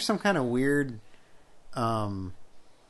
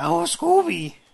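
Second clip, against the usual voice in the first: high, loud, poorly done cartoon dog voice. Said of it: "That's not Scooby".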